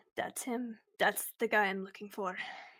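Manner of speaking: muttered quietly under her breath. Voicing a character spotting a hated man in a crowd: said under her breath. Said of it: "under her breath".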